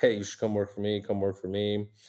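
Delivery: ordinary talk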